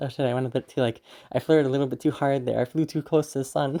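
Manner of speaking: ordinary talk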